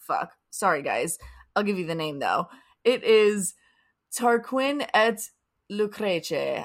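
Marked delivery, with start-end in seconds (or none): 4.2-6.6 Italian-accented pronunciation. Reading out a French title, said in an Italian accent. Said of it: "But I said it in an Italian accent".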